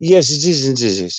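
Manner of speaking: put-on slow, posh, upper-class English accent. Showing how John Heaton would say the same thing, John Heaton's posh English. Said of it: "John Heaton speaking posh English... He talks like Prince Charles".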